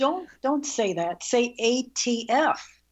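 ordinary talk, nothing marked

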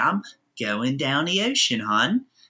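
put-on everyday homegrown local Baltimore accent. A Baltimorean showing how locals answer what they're doing, in a Baltimore accent. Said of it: "We have this great little accent where we talk".

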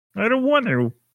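very high puppet voice, pitched way up. Answering a joke about Muppets with lightsabers in a Kermit voice. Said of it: "Was that supposed to be Kermit?".

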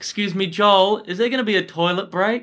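play-acted, very high called-out heckling yell. Retelling how an audience member yelled out before the punchline: imitating a lady yelling out. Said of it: "this lady just yells out".

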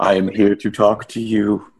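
very slow, deliberate delivery, every word spaced out. Imitating Sisko leaning in close to talk: Benjamin Sisko impression. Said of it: "Holy shit, Sisko, back up".

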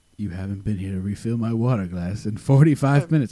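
bad put-on, rude complaining voice. Doing a bit about a rude celebrity complaining to a waiter: Alan Arkin impression. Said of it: "I can't do an impression of Alan Arkin".

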